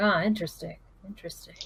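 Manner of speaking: mumbled, muttered under the breath to oneself. Acting out what a woman mumbles to herself, muttered to herself. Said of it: "she just kind of mutter, mumbles to herself like".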